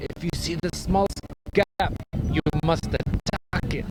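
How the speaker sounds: put-on Kenyan-accented voice. Recall a guy you used to play with and what he would say, imitating a Kenyan accent. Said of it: "do his Kenyan accent".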